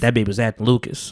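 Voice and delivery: sultry sports commentator voice. Doing a Stephen A impression while judging a TV character: Stephen A impression. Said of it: "I gotta get my Stephen A right now".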